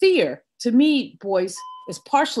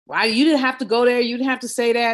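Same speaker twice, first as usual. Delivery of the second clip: mock fussing, scolding tone, faster pace. Retelling how Mommy fussed at her for sixty miles, mimicking mother fussing. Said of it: "she fussed at me from for sixty miles".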